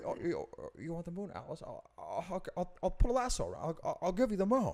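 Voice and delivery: put-on stammering movie-star style voice. Swapping impressions with a friend, doing a stammering Jimmy Stewart impression. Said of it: "you have a really good Jimmy".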